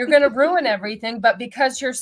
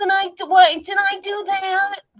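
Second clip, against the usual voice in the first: put-on slow, high, drawn-out whiny little kid voice; 8 semitones higher than usual. Mocking a character as a whiny little kid: imitating Sadness as a whiny kid. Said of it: "a whiny little kid that kept doing things wrong and going".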